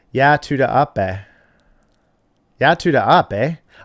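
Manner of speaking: Canadian accent with Canadian "a" sound, ending on "eh". Speaker shows chat how to pronounce a phrase, Fargo-style Canadian accent. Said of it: "More Canadian or Fargo sounded".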